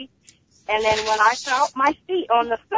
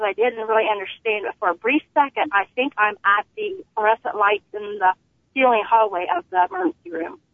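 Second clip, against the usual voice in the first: ordinary delivery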